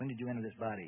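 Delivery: ordinary delivery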